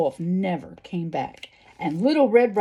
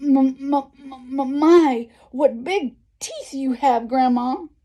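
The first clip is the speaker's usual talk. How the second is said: stammering, much higher and slower; 6 semitones higher than usual. Reading the fairy tale, narrator voices the girl facing the wolf, stuttering.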